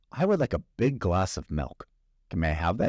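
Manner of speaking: normal talking voice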